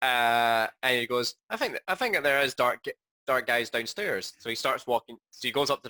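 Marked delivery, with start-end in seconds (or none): none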